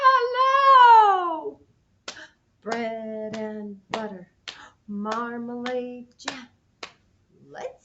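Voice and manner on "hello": hello as loud as possible, very high, drawn out. Leading a group in a hello game, the speaker says hello as loudly as possible. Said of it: "say hello as loudly as we can".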